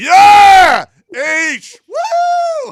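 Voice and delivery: very loud, very high, shrill swooping yell. Retelling cheering at the nurse's answer: imitating his own yell. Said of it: "You always yell into the damn mic".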